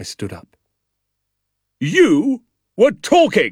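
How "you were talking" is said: shrill, high-pitched, accusing barked delivery. A captain confronts a boy he caught talking; barking. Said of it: "he barked".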